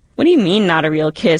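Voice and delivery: plain reading voice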